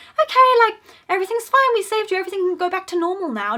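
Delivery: high, loud, selfish voice. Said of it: "Sabrina's just being selfish, like".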